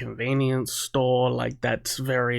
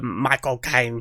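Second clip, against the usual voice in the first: exaggerated Cockney accent; 3 dB louder than usual. Showing how people overdo an impression: over-the-top Michael Caine impression. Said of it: "way too hard into the kind of Cockney accent".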